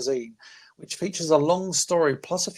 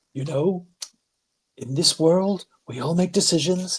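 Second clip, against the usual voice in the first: put-on celebrity voice, grand speech delivery. Joking after switching off the camera, speaking like John Cena. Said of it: "he's gotta speak like John Cena".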